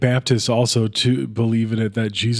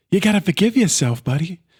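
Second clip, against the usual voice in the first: put-on tough-guy actor voice, higher; 7 semitones higher than usual. Imagining a different actor starring in the movie: Mark Wahlberg impression. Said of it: "this movie starred Mark Wahlberg, and he's like".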